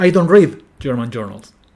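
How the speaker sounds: exaggerated nuclear stress on "read". Explaining a reply about German journals, with the main stress on read. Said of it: "el acento nuclear cae sobre el verbo read".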